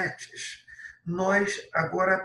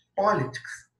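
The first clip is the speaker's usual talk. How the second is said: first syllable po of politics strongly stressed. Teaching english word stress in portuguese: stress on po in politics. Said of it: "A tônica, que é a mais forte, está no pó".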